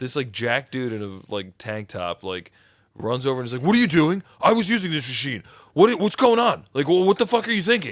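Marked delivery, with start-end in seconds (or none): 3.6-7.9 very high, loud, angry, aggressive in-your-face yelling. Telling of a gym guy confronting a woman at a machine, mock-angry aggressive yelling. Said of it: "just like yelling at her".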